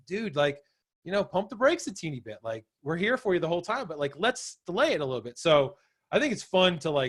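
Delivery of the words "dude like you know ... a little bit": usual speaking voice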